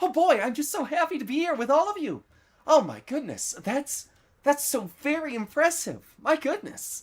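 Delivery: very high, cheerful character voice. Imagining reading Riel's lines for an audition, in a cheerful Riel voice. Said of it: "if I was reading Riel's lines".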